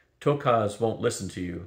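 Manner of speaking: ordinary talk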